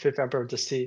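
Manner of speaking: usual speaking voice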